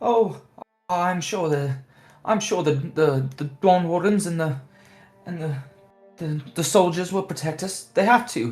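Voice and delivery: high, anxious, worried, fretful villager voice. Voicing passing villagers as the party walks through camp: worried crowd murmur. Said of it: "these voiced concerns and uncertainties".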